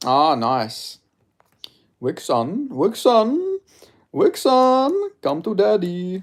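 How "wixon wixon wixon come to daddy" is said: put-on very high, very slow, sing-song German accent. Replying to someone who is German with an inside joke: put-on German accent. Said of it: "in a really random German accent".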